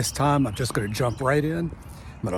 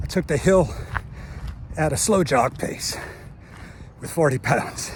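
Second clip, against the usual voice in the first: winded and breathless, higher; 2 semitones higher than usual. Just after jogging up a hill carrying forty pounds: out of breath. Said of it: "So forgive my out of breath".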